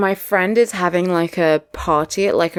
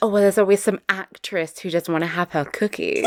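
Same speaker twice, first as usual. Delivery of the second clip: usual speaking voice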